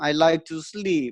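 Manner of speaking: put-on French accent. Retelling what a girl said when asked what she likes to do: imitating a girl's french accent. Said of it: "What was that accent?".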